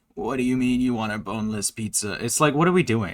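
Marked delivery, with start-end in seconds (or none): 0.2-2.1 scratchy, rasping character voice. Imitating a streamer's bit voice: imitating Shay's raspy voice. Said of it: "It's not a Gaster voice".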